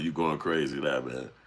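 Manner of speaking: normal talking voice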